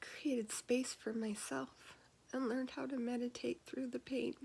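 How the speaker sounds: choking up, near tears. Sharing a personal story, choking up, about to cry. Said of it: "I'm gonna cry".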